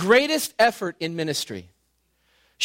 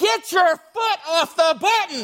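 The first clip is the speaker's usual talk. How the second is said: high, slow yell as if from above. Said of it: "he's yelling down at us".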